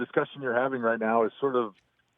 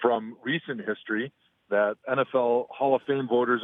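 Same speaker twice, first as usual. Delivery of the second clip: usual speaking voice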